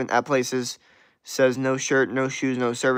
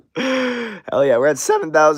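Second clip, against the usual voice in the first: loud cry, heavy voice crack, "Hell" stretched out; 4 semitones higher, 6 dB louder than usual. Speaking to an audience of subscribers, voice cracking. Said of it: "you hear that voice crack?".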